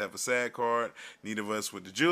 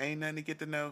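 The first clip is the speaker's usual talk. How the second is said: put-on girl voice, higher, quieter; 5 semitones higher, 7 dB quieter than usual. In a skit a guy hits on Brenda; as Brenda, brush him off in put-on girl voice. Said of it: "I'm gonna do the girl voice then".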